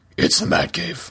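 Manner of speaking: breathy whispered caped-hero voice.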